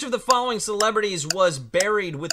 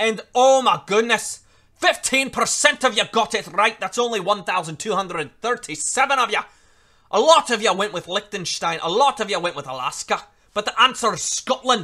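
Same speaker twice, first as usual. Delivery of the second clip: put-on Scottish accent, like a film voice; 2 semitones higher, 4 dB louder than usual. Revealing a poll answer to viewers, in a How to Train Your Dragon Scottish accent. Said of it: "I'm pretty sure I'm doing a Scottish accent now".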